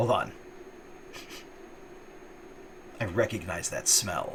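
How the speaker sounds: whispered, gruff, breathy villain voice. An unseen speaker is overheard by someone crouching down to listen, in a fairly gruff voice. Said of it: "a fairly gruff voice say".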